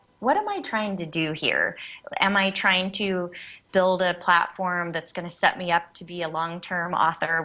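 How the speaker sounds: ordinary talk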